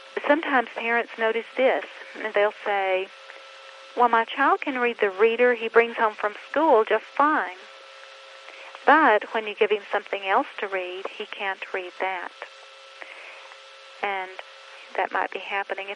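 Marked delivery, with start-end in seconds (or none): none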